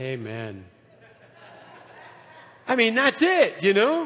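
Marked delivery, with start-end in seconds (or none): 0.0-0.6 soft, subdued, restrained delivery. Showing how the quiet church sounds when excited: imitating a quiet excited church. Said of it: "it sounds like this".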